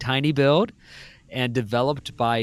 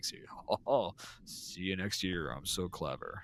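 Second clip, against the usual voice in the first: fake smug, self-satisfied tone, lower and quieter; 6 semitones lower, 14 dB quieter than usual. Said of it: "You can't be like".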